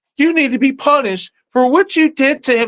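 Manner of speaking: very high, whingeing, unscary delivery. Criticizing an actress's delivery by quoting her line: imitating a whiny delivery. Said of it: "she sounded very whiny".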